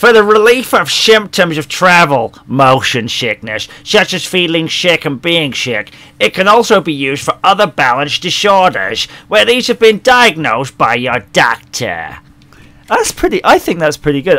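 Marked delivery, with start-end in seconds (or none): 0.0-12.2 put-on American accent. Practising one voice by reading out motion sickness medicine directions, in an American accent. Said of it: "I could just talk like that when I go to the States".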